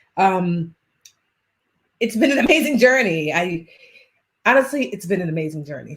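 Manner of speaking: slightly teary voice, welling up. Speaker after stopping a screen share: a little teary-eyed. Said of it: "I feel a little teary eyed".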